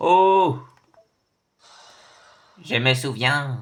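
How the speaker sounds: very loud, high-pitched, full-throated shout. Mid-conversation, another speaker asks why this one is shouting: shouting. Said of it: "pourquoi tu cries comme ça".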